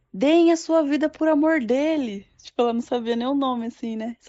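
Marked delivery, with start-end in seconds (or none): 0.2-2.3 mock drawn-out, high, slow shouted call. Retelling how a woman in the camp kept shouting, imitating her shouting. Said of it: "ela começou a gritar assim".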